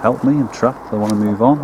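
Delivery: ordinary talk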